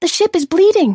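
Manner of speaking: very high, loud, sudden cry. A narrator reads Maika's line as she cries out. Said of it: "Maika cries out".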